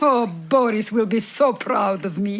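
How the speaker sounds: mock cartoon villain woman voice. Imagining what someone will say while clearing things out, in her Natasha voice. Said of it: "her Natasha voice".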